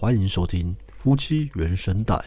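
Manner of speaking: artificially deepened, forced low voice, slow and measured. Showing how the recorded show opening was done, in a deliberately lowered voice. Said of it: "我特意压低声音".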